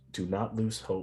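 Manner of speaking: softly spoken. A game master voices a creature speaking to the players, in a soft voice. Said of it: "it has a soft voice that speaks in common".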